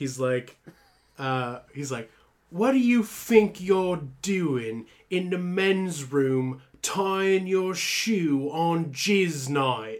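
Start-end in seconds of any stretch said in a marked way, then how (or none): 2.5-10.0 odd put-on British accent, pitched up. Retelling what a stranger in a restroom said: weird British accent. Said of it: "he's got a weird British accent".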